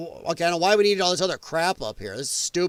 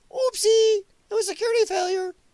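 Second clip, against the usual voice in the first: high, fast mocking innocent voice. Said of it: "and going".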